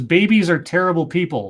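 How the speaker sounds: ordinary delivery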